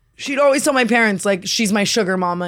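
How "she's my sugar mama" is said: usual speaking voice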